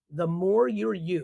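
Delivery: nice and slow, with deliberate emphasis.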